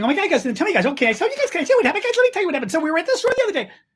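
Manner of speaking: very high, fast, jittery, hyper babble. Mocking a politician's son's nightly videos: imitating Donald Trump Junior talking fast. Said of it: "talking like this".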